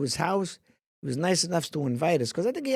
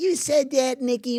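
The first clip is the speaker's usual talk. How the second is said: put-on higher-pitched Chicago accent; 7 semitones higher than usual. Retelling how Dennis Franz, a Chicago guy, answered your remark, in Dennis Franz's Chicago accent. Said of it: "with a Chicago accent".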